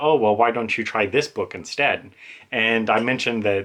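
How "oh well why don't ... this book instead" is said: usual speaking voice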